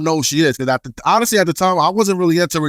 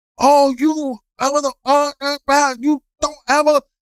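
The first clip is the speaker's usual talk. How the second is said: acted berserk rage, very high, stammering, drawn out; 10 semitones higher than usual. Retelling a woman's reaction after papers landed in her cab: imitating a furious outburst. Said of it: "She went berserk".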